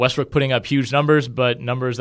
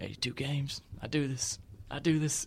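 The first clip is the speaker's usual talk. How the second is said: put-on meek, tired voice, quieter; 15 dB quieter than usual. Retelling an interview answer about Marcus Smart: meek, tired Russell Westbrook impression. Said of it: "just kinda meekly said it out there".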